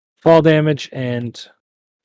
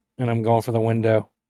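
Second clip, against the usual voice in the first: ordinary delivery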